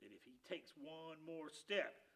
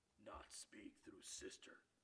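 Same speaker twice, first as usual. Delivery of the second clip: deep, low rumble, nearly whispered; 6 semitones lower, 13 dB quieter than usual. Lifting his paw for silence, he answers in a deep rumbling voice. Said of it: "he said in a deep rumbling voice".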